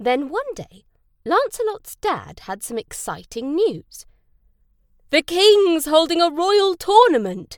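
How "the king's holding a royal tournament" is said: eager, excited cry, high and loud. Reading a story, a father shares news with his son; crying out excitedly. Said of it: "he cried".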